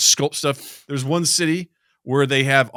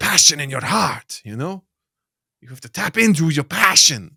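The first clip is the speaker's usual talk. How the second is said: Scottish accent, vague and drifting; 3 semitones higher than usual. Doing a put-on accent the speaker can't name, ending up Tommy Wiseau. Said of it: "I don't know what accent I'm doing".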